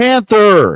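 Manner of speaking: very high, very loud, high-pitched call. Retelling a pilot's line as his comrade's plane explodes, slightly raised voice. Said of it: "a slightly elevated, raised voice".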